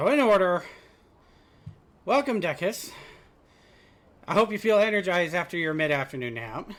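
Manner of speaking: breathless, catching breath while speaking. Streamer back from a break, welcoming viewers, out of breath. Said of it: "Trying to catch my breath".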